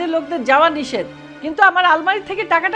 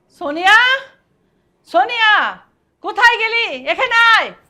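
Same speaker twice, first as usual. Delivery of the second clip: shouting, higher; 4 semitones higher than usual. A mother calling out for her daughter, shouting. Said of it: "এভাবে চিৎকার চেঁচামেচি করছো কেন?".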